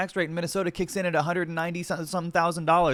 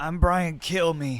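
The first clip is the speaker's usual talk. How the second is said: put-on newscaster voice with a sad tone. Repeating a TV host's sign-off line: imitating Brian Kilmeade saying it sadly. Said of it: "He says it with such sadness".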